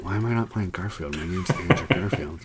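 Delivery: mock under-breath mutter. Imagining an actor complaining after every line: imitating Andrew Garfield muttering under breath. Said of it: "he just keeps kinda saying under his breath".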